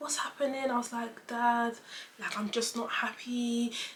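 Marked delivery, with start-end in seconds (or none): 1.3-3.7 mock crying, pleading tone, quieter. Retelling own plea to Dad, imitating own crying. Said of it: "And now I'm crying".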